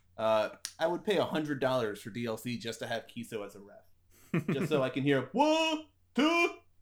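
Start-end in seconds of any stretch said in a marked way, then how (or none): 5.3-6.5 very high, sing-song, English counting. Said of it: "Kiso and his, uh, his English counting".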